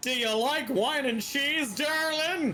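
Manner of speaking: squeaky, very high put-on voice. Joking about a character's pickup line, in a Bee Movie voice. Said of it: "Kinda in the same vein as in Bee Movie".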